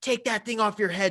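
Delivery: hostile yell.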